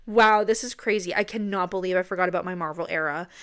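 normal talking voice

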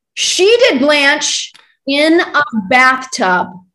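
delighted yell, swooping and drawn out. Asked about a favorite theater performer, praising her, yelling. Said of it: "I'm yelling. Sorry".

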